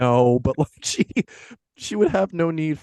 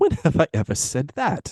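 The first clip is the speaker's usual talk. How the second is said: theatrical, animated, swooping put-on English accent; 3 semitones higher than usual. Acting Scrooge's breakup scene with Belle: Scrooge in put-on English accent. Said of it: "I'm going to try an accent for this one".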